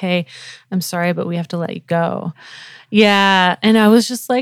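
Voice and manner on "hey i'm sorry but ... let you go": put-on somber tone. Retelling a call from the boss letting them go: imitating a somber boss. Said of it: "really somber".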